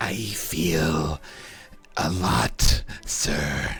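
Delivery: low, eerie, creepy voice, drawn out. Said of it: "Only if you do the creepy voice".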